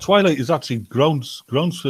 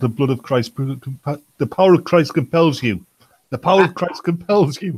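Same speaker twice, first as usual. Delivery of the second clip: usual speaking voice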